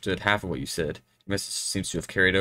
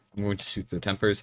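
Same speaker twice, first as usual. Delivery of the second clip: plain reading voice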